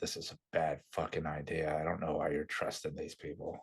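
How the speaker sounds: hushed half-whisper, kept quiet, said aside. Voicing a one-armed man speaking to the smaller woman: half-whispering in character. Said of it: "he's whispering".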